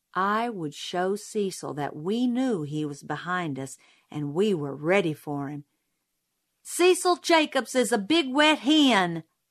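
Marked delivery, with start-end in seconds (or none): 6.7-9.3 sudden, high, loud, abrupt yell. Turning around on someone following behind them, the narrator yelled suddenly. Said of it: "I yelled suddenly".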